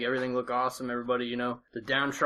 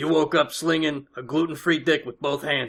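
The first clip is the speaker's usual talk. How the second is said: bellowed at full volume; 3 semitones higher, 8 dB louder than usual. Saying a Monday message in his voice: Joey Coco Diaz voice. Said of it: "I'm going to try my best to say it in his voice".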